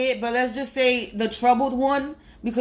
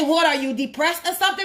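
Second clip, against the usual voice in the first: put-on yelling, higher pitch; 5 semitones higher than usual. Retelling what a mother said to her son in a supermarket: imitating a mother yelling. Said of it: "felt the need to yell at your son".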